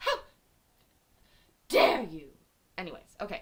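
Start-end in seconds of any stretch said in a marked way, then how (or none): 0.0-2.3 very loud, hard, swooping stress on how. Chatting with viewers, doing an impression: Greta Thunberg voice. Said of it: "She gets it in the how".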